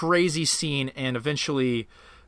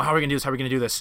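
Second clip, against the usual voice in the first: put-on whispering. Retelling a book scene where the characters plan an attack: imitating characters whispering. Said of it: "they're all whispering to each other".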